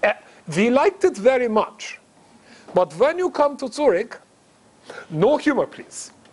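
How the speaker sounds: put-on German accent bending the English. Retelling a phone call from a caller: imitating a german accent. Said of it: "in this German accent".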